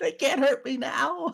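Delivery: shrill, very high, manic laughing cackle. A player's character shuts himself in the safest dungeon room, maniacal cackling. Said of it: "Just laughing maniacally".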